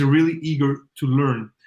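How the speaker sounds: ordinary delivery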